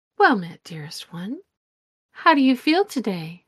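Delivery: gentle, welcoming voice of a beautiful woman. Narrating a game, the storyteller voices a woman appearing in a reflection: soft voice. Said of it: "she speaks in a soft voice".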